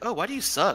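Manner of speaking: put-on disgusted jeer. Imitating a player who farms you, sounding disgusted. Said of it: "he's, like, disgusted".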